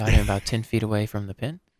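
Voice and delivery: low, relaxed, relaxing voice. Showing how calling a golf broadcast would sound: low relaxing voice. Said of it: "talk in my kind of low voice here".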